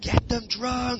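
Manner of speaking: shrill, high, screamed shout. Retelling what he shouted from the back of the room; shouting out. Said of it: "And I screamed it out".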